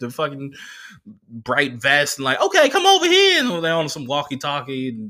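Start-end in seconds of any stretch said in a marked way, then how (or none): 2.4-3.4 very high, shrill, loud shouting. Describing workers in bright vests at the train, imitating someone yelling. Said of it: "They yelling all over the place".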